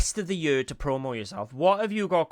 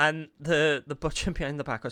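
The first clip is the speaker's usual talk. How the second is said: ordinary delivery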